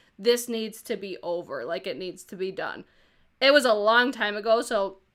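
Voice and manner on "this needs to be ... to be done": ordinary talk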